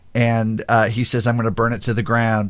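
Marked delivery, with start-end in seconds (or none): none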